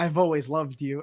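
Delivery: plain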